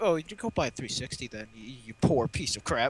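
put-on smug voice. Speaker mocking his response about the Xbox 360, mocking a smug tone. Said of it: "He said it's such a smug tone".

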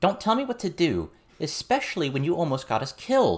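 calling out, pitched very high. Narrating a story, Lucy calls out to another character. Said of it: "Lucy called out".

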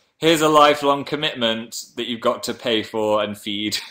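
ordinary delivery

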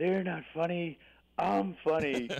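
put-on steaming anger. Retelling what she said after one of her plays: imitating someone fuming.

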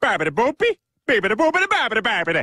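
put-on Italian nonsense. Asked what he is doing, a character replies in fake Italian gibberish. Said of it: "Speaking Italian".

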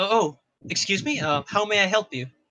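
mildly startled, caught off guard. Voicing a bookkeeper who looks up at the visitors: a little surprised. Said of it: "looks up at you with a little bit of surprise".

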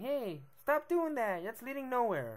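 high, slow, drawn-out nagging parent voice. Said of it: "or our parents saying".

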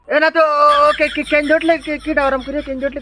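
high, loud, flustered panic, blurted out.

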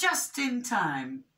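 ordinary delivery

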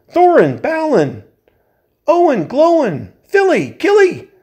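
shrill, very high, drawn-out cry at top volume. Reading a story, he calls for his companions after his torch goes out: crying out as loud as possible. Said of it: "he cried as loud as he could".

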